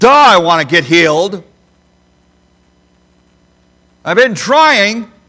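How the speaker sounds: put-on surly, snide, sarcastic tone. Acting out a man's answer when asked if he wants to be healed, mock-sarcastic surly reply. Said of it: "surly, sarcastic tone".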